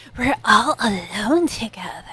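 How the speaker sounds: put-on breathy, sultry voice. Retelling how a woman delivered her line, breathy, hentai-ish voice. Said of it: "She like does it breathy, kind of kind of hentai-ish".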